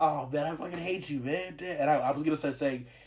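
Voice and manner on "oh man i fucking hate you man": play-acted, playful, teasing, jokey tone. Retelling what was said while laughing and smiling: imitating own joking tone. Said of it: "I said that "I hate you" thing in the joking tone".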